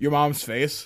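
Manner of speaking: put-on flat, deadpan delivery. Recounting a room being asked about cutie marks, one person's reply: retelling a deadpan answer. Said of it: "And just deadpan".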